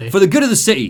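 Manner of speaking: attempted Cockney accent, high-pitched and loud. Reading a character's audio log quote, attempting a cockney accent. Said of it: "He's Cockney".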